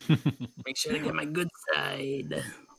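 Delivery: put-on gator creature voice. Posing for someone taking photos, gator voice. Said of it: "What is this voice you're doing?".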